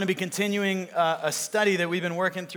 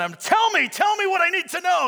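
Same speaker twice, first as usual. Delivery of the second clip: mock, very high-pitched, shrill, swooping yell; 12 semitones higher, 6 dB louder than usual. Retelling a movie scene, acting out Indy yelling at Kazim, retelling a yell. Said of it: "he's yelling".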